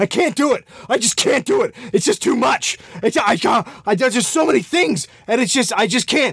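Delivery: acted-out frantic panic, high-pitched and stammering. Retelling a late-night call to the showrunner, the speaker is imitating someone panicking. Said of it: "he calls the showrunner in a panic".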